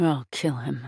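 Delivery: muttered under breath. Reading a story aloud, narrating Papa's line, said under his breath. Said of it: "Papa says under his breath".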